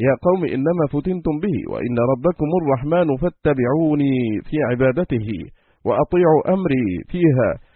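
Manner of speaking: plain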